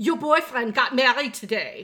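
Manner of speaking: put-on Japanese-accented English. Retelling what a mother said in the kitchen: imitating mother's Jinglish accent. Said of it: "in her little, you know, Jinglish".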